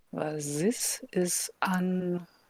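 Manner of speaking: very soft, slow, hushed, drawn-out murmur. Speaking in character, looking up at a strange moon: very soft voice. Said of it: "very softly say to myself".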